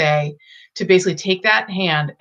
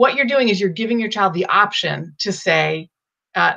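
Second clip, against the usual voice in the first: ordinary talk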